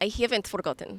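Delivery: put-on Eastern European accented voice. Trading accent attempts, repeating the phrase back in an Eastern European accent. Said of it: "Eastern European".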